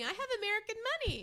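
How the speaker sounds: excited shouting pitched very high. Retelling own words at a store checkout: imitating own past shout. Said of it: "I know that I was shouting".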